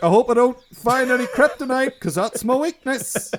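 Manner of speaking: put-on very high scream. Mocking Superman announcing his weakness: imitating Superman screaming. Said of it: "just screaming about".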